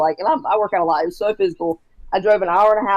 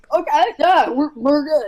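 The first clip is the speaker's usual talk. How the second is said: tearful, pitched-up, crying through the words; 8 semitones higher than usual. Retelling own reply to a weeping client: imitating own past crying. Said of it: "I'm crying down, too".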